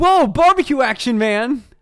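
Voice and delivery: loud, high 80s surfer dude voice. Recapping a scene, quoting a guy on the street dressed like a newsie: 80s surfer voice. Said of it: "he talks like an 80s surfer".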